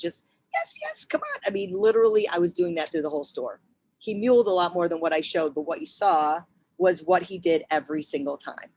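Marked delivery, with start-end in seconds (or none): 0.0-1.4 very high, soft, gentle, encouraging coaxing voice. The speaker retells urging a dog that won't move forward, in a high-pitched voice. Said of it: "my high voice, my high pitches".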